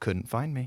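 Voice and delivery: put-on quiet muttered taunting tone. Retelling how Martin walked past in the green room: Martin muttering under his breath. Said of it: "under his breath goes".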